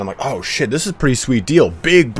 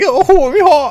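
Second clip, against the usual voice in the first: shrill, very high, loud yelling; 7 dB louder than usual. Telling a story about a guy at a bar: imitating a man yelling. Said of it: "So this guy's just like yelling".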